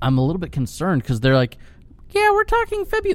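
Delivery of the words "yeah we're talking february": very high, squeaky put-on voice. Quoting a person they like better than Dylan: Maddie impression. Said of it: "That's my impression of Maddie".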